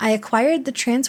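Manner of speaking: plain reading voice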